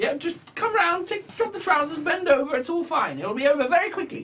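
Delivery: very high-pitched little gnome woman voice. Voicing a young gnome lady greeting the sheriff: young gnome lady voice. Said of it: "this little gnome lady".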